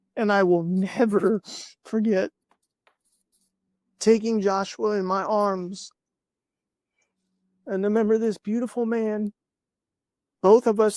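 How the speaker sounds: tearful voice, crying while talking. Telling an emotional story about holding a dying boy: crying while talking. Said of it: "like me right now, crying".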